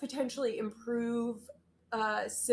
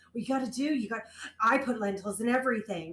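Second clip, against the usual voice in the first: earnest, full-on, intense insistent tone. Retelling being pressured to eat lentils: imitating Liz at full intensity. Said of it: "full intensity".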